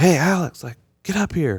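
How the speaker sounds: put-on, high-pitched hollered call. Retelling how the wife called from upstairs during a meeting: imitating wife hollering. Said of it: "she starts hollering from upstairs".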